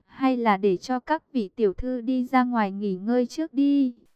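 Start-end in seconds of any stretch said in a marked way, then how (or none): none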